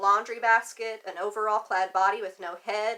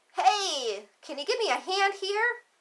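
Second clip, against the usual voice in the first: tiny, cute, very high-pitched shout; 10 semitones higher than usual. A tiny kitten stuck in the mud calls out to Thomas, cute, high-pitched shout. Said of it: "shouted in a cute, high-pitched voice".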